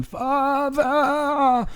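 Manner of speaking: very high-pitched screamed cry. Narrating a scene, voicing a cry from below: screaming. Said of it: "again from below that scream".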